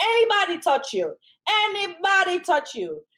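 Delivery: loud, high, drawn-out yell. Retelling what her mom told her if anybody touched her: imitating mom yelling. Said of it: "I don't mean to yell".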